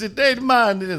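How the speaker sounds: badly done, weak Jamaican accent, pitched high. Explaining a wrestler's old Jamaican gimmick, show how he talked in a bad Kofi Kingston Jamaican accent. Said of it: "and he talks like this".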